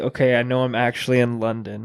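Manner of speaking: ordinary talk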